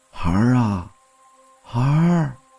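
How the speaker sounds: put-on old, raspy, hoarse, haunting voice. A narrator reads a distant voice calling out behind a man: old, hoarse, haunting voice. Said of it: "苍老的、沙哑的、迷魂般的声音".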